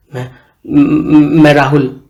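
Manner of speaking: stammering. Narrator reading a story where Rahul introduces himself to Aman, stammering. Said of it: "Rahul हकलाते हुए बोला".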